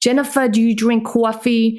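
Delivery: strong put-on Bronx New York accent. Quoting the speaker's mother, in a Bronx New York accent. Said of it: "my mother still talks like this to this day".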